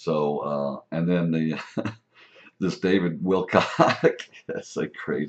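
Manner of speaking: whispered and hushed, breaking into laughter through words. Discussing people he recommends, laughing while talking. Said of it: "I'm so sorry for laughing".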